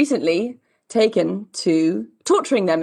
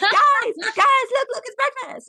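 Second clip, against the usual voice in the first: mock frantic dog-pack yapping, shrill, excited, very high. Retelling how the dogs greet their breakfast: imitating dogs screaming and shouting. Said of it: "howl and scream and shout when they see her".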